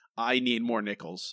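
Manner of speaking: ordinary delivery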